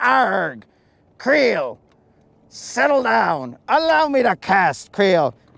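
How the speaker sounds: put-on pirate voice. Answering the parrot in character: put-on pirate voice. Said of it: "we're kinda like pirates right now".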